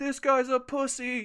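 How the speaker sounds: mocking tone, slow and high.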